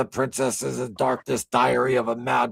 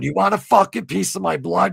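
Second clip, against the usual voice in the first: mock raging, furious outburst scream, pitched up; 7 semitones higher, 4 dB louder than usual. Retelling fighting a phone security check: imitating himself screaming. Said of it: "I'm screaming at it going".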